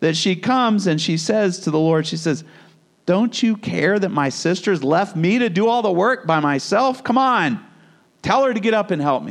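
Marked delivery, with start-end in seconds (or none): 3.1-9.3 mock-frustrated, exasperated voice. Retelling a woman's complaint to the Lord about her sister, mock-frustrated. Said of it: "she gets so frustrated".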